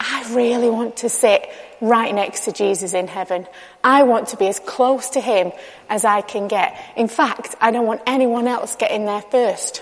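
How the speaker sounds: ordinary delivery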